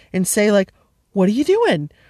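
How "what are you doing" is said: curious, raised, inquisitive tone. Showing how to talk to a pet pug: imitating a raised inquisitive voice. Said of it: "you kind of raise your voice".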